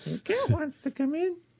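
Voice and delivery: very high, squeaky put-on voice. Telling a story about a cat on the porch: imitating the neighbors. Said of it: "that's my impression of our neighbors".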